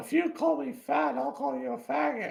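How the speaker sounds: very high, creaky, whiny, taunting voice. Commentating a fight, speaker voices a fighter in a mocking whiny voice. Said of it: "the Jay being a whiny bitch".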